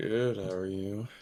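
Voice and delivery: groggy, drowsy, soft, sleepy just-woke-up voice. Answering a greeting, in a sleepy, just-woke-up voice. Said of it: "Did you sound like you just woke up?".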